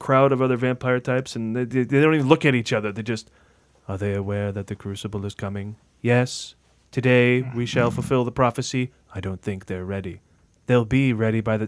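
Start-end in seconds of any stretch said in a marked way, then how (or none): 3.9-11.7 imitated flat deadpan delivery, lower. Mocking trailer actors' acting: mock serious monotone. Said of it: "so serious and just monotone".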